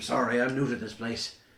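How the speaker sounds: put-on Irish accent. Voicing Captain Briggenbell, answering a player's question: Captain Briggenbell Irish accent. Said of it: "Irish accent, yep".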